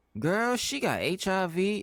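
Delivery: very high, very slow, loud, shrill, drawn-out cashier voice. Retelling a cashier gossiping to a coworker: imitating a loud cashier. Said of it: "the cashier is so loud".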